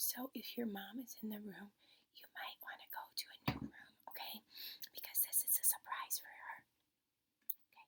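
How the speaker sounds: quiet, hushed whisper. Addressing second graders in a video, keeping a surprise from their moms: whispering. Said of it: "I'm whispering".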